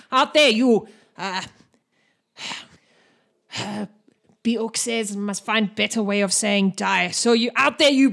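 acted orc character voice. Voicing an orc spellcaster warning the group: voicing an orc spellcaster. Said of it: "He goes".

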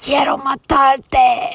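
mock, loud, high yelling with laughs breaking through. Recounting swearing at him in spanish, retelling a scream. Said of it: "I was laughing in between screaming".

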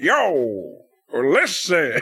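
swooping, full country Southern drawl, drawn-out "yo". Retelling a wrestling commentator's call, imitating Jim Ross. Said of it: "Country as country can be".

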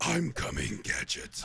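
rough, rasping, creaky cartoon villain voice. Among friends trading voices, the speaker slips into a Dr. Claw impression. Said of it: "Dr. Claw impression this entire time".

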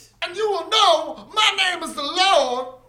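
mock preacher villain voice, high, slow and booming. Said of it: "movie speech impression".

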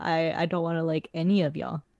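ordinary talk, nothing marked

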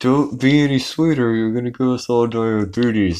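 acted clenched-teeth speech. Retelling a cast member's aside to a castmate before the interns, acted through gritted teeth. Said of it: "through their teeth".

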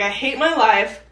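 normal talking voice

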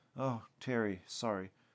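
ordinary delivery

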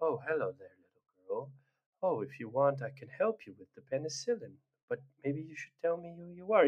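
put-on spaced-out, dazed, zoned-out calm voice. Describing a game character voiced by Nolan North: imitating a drugged, zoned-out Nathan Drake. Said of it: "he speaks in such a manner".

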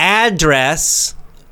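ADdress, first syllable punched with a rise.

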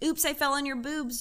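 normal talking voice

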